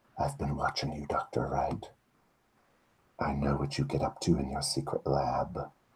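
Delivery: hushed, secretive whisper. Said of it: "she whispers to you".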